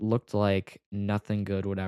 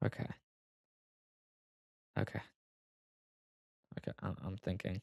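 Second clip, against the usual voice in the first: on the verge of tears, much quieter; 12 dB quieter than usual. Recalling a family story no one else knows about: on the verge of tears. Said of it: "I'm actually gonna cry talking about it".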